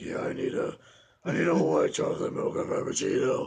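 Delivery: hoarse, croaky, rasping voice. Retelling ordering at Starbucks after losing his voice while sick, in a Batman voice. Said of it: "I talked like Batman for a month".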